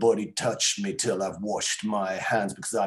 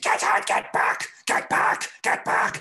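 put-on older man voice, freaking out, repeating words. Retelling a man in a queue turning around: imitating someone freaking out. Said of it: "he was just freaking out".

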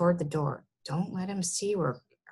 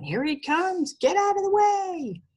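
very high, rising shouted yell; 12 semitones higher, 4 dB louder than usual. Two boys gallop up a hill through high grass: yelling.

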